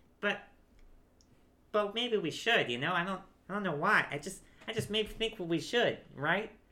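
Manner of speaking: high-pitched voice. A man beside the wagon talks to the other man, in a high voice. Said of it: "The man crossing his arm is probably bigger. / and you see two large men. / The man crossing his arms is still just looking at the wagon, / is the one that had the high voice? The high voice one".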